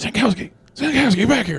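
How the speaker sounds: high, carrying stage whisper. Calling to another character around the corner without being noticed: half-whispering. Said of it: "I'm whispering".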